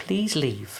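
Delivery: high, very posh, refined lady's voice. Recounting a voice heard in the background, imitating a very posh lady's voice. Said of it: "a very posh lady's voice go".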